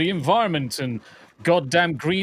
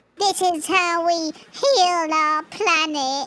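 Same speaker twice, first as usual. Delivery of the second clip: put-on obnoxious jerk voice, very high; 13 semitones higher than usual. Mimicking the woman in the advert: put-on arsehole voice. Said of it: "I need to put on the arsehole voice".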